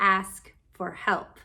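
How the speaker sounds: slow, deliberate, each word spaced out. Speaker repeats a point about asking for help; said slower. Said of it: "Let me say that again, slower".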